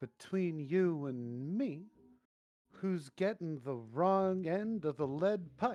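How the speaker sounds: conspiratorial, confiding, secretive tone. Speaker's character leans in toward another character, leaning in conspiratorially. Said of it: "I'm going to lean in conspiratorially".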